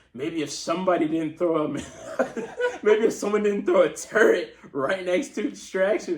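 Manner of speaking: play-acted, snide, needling sarcastic tone. Speaker recalls baiting another player in a game, retelling a sarcastic remark. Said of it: "I tried to be like, you know, sarcastic".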